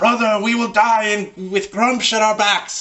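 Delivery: high, loud orc yell. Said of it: "yells out in Orcish".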